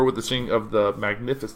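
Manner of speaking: usual speaking voice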